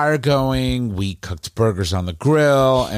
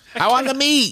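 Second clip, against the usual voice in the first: put-on little old lady impression, higher. Retelling refusing a meatless burger: little old lady from 1985 commercial. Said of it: "like little old lady from the nineteen eighty-five commercial".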